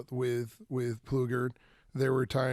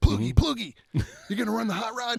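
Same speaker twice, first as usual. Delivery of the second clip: fast, high, swooping, horrible-sounding voice; 9 semitones higher, 4 dB louder than usual. Retelling a visitor in the pit asking about the hot rod: horrible John Force imitation. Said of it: "horrible imitation".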